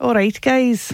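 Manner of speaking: attempted Scottish accent. Asked to do their scottish accent, greeting the group in an attempted scottish accent. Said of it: "That's Newcastle".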